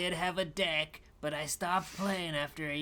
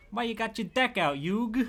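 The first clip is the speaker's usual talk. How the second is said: put-on hammy Brooklyn accent, loud and high; 5 semitones higher, 7 dB louder than usual. Quoting Joey from the new Yu-Gi-Oh movie, hammy Joey Brooklyn accent. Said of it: "hamming up the Brooklyn accent".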